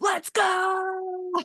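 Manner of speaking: mock very high loud thrilled child cheer, "go" stretched. Parent imitating their eight-year-old daughter's catchphrase, imitating Elliot's excited cheer. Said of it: "when she gets so excited".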